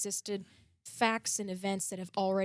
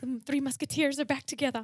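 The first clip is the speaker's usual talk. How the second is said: put-on, generic British accent, pitched up; 6 semitones higher than usual. Welcoming two co-hosts back together, in a generic British accent. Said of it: "my generic British accent".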